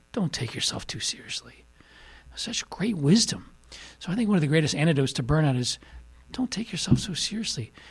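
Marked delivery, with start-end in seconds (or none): 0.2-1.7 put-on half-whispered old man voice with Irish accent. Son retells his father's answer to a request for wisdom, old Irish guy voice. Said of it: "He talked like this, an old Irish guy".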